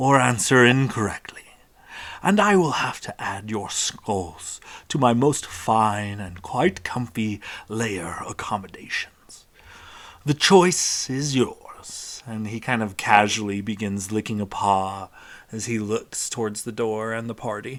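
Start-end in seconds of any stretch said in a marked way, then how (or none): 0.0-12.2 grand, theatrical sphinx voice. Voicing a sphinx greeting the party: booming sphinx voice. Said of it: "With a booming voice".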